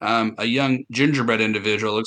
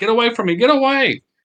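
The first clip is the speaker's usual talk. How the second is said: very high, shrill, terrified, panicked scream; 12 semitones higher, 5 dB louder than usual. Voicing a gingerbread creature screaming at an attacker: gingerbread creature screaming. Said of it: "a gingerbread who is now screaming".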